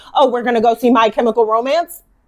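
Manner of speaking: full mock-sarcastic, disbelieving tone. Repeating to someone what they once said back to you in disbelief, imitating full sarcasm voice. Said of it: "you had on your like full sarcasm voice".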